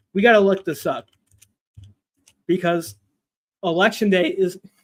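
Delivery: halting voice, breaking and cracking mid-phrase. Speak the line you will apologize for right afterwards, with your voice cracking. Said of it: "voice crack there. Sorry".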